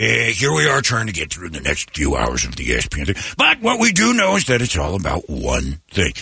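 swooping sports announcer voice. Recounting what unexpectedly came out of them, a Chris Berman voice. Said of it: "I ended up getting a Chris Berman impression of it, which was".

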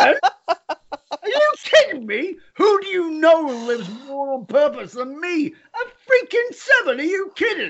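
shocked voice shooting very high, sudden outburst. Recounting reacting to his wife while driving, reenacting own voice shooting up. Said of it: "my voice went up 3 octaves".

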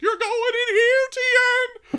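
very high, loud, shrill shriek, one word drawn out. Imagining Paul Bearer echoing the line to Tien, in a high, shrill voice. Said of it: "repeat things in a high, shrill voice".

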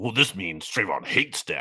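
scornful, derisive mocking send-up. Mocking how fans react to a football story: mocking imitation of fans. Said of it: "fans just, like, be like".

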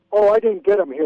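ordinary delivery

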